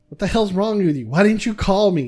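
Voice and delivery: mock angry yelling. Retelling telling his dad about a concussion, the speaker is imitating his dad yelling. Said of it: "He starts yelling at me".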